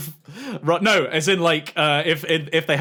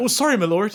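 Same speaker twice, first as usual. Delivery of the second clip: put-on apologetic tone with slightly higher pitch; 5 semitones higher than usual. Picturing an apology after inconveniencing another player: imitating own apologetic reply. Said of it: "and I'm just like".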